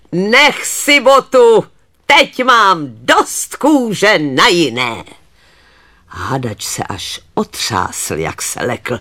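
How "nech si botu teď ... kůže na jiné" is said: loud, scornful, jeering, sneering shout. A water goblin rises from the pond and calls to the farmer, sneering. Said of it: "ušklíbl se na sedláka a zvolal".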